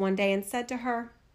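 plain reading voice

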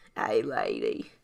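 bad Southern accent, voice dropped way down.

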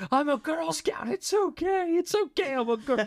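put-on, very high, drawn-out, top-of-the-lungs scream. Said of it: "he's screaming at me at the top of his lungs".

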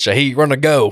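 quick, high Louisiana voice. Describing a mic'd-up clip of Carr on third down: Carr's Louisiana accent. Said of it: "He's got that Louisiana accent down too".

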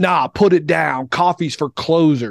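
imitated slow screaming. Speaker retells a movie scene of a man yelling at a guy getting coffee, imitating screaming. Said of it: "He's just screaming at people".

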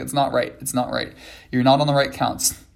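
ordinary talk, nothing marked

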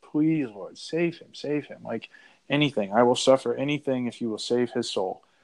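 mock begging, persistent and insistent, over and over. Retelling the saint asking again after being refused: retelling a persistent plea. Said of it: "again, just very persistent".

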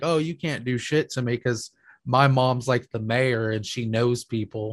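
ordinary talk

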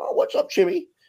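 put-on very high voice with a local Bridgeport accent. Telling how a guy started calling everyone Chimmy, imitating MacGaffer's Bridgeport accent. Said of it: "he talks like this".

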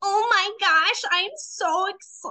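deliberately cringy acted tone, high and slow. Retelling a FaceTime call, the speaker repeats a deliberately cringy put-on tone. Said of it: "in a really cringy tone of voice".

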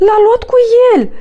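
shouted. A character calls out from behind a boulder to the others: shouted. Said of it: "strigă Zumzi".

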